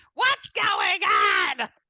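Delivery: put-on very high, very loud scream in Jersey accent. Reenacting a scene together with another person: Jersey-accent scream. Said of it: "this beautiful Jersey accent scream".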